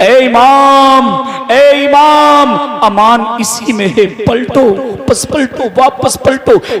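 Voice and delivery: weeping, tearful, pleading voice.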